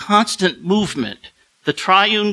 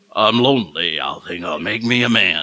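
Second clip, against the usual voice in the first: very deep bass voice, dropped very low; 9 semitones lower than usual. Recalling a high school record of a poem, speaker tries James Earl Jones's bass. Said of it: "So I don't have that bass".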